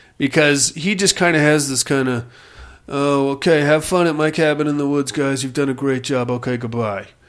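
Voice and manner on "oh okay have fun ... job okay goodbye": dead flat, droning, stoned-sounding monotone. Mocking an actor's delivery in a movie, in a flat monotone William Baldwin impression. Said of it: "And just this monotone, flat".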